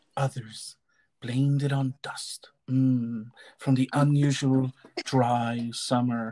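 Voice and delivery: sexy reading voice. Showing that a line from a flu book can sound sexy: sexy reading voice. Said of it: "you can make anything sound sexy".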